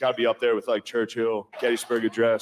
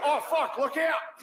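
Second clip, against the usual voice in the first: put-on Australian accent, male, pitched higher. Imagining an australian guy in an office in danger, put-on australian accent. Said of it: "an Australian guy in the office on nine eleven".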